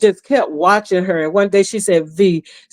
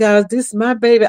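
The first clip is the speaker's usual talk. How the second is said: put-on tearful crying voice, higher; 3 semitones higher than usual. Retelling a phone call where her daughter started crying: imitating someone crying. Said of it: "What you crying for?".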